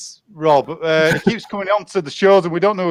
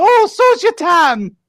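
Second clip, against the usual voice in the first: put-on elderly Scottish nanny voice, higher pitch; 11 semitones higher, 3 dB louder than usual. Acting out the film scene, answering in a Mrs Doubtfire impression. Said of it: "doing the Missus Doubtfire bit".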